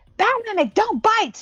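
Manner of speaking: loud annoyed yell. Warning a Mimic in character so everybody hears: loud annoyed yell. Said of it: "I'm gonna yell it loud so everybody else can hear me".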